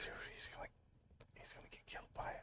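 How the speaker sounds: hushed whisper. Watching another player about to get killed by something, whispering. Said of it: "Why am I whispering?".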